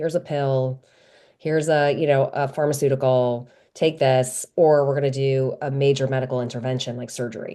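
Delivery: ordinary talk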